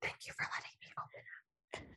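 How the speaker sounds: hushed, breathy, very quiet, confiding whisper. Showing how a man was talking to a woman: imitating his whisper. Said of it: "He was talking to her like this".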